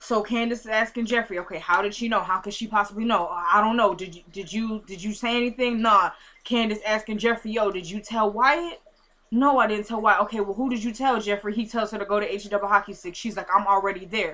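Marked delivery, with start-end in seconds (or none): none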